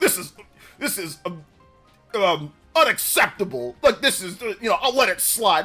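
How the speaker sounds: fake tough-guy posturing voice. Imitating people who sent an email acting all hard: imitating mock tough talk. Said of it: "acting all hard, like, trying to act all sly little, you know, tough talk".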